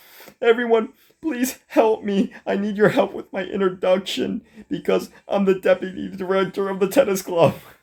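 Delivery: tearful, crying, pleading voice. Retelling a character's plea for help with an introduction: imitating someone crying.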